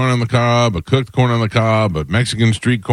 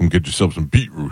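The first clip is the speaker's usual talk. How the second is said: put-on aggression; 5 semitones lower than usual. Retelling how Ian pitched beetroot juice, imitating Ian's aggressive delivery. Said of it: "Ian would say it so aggressive".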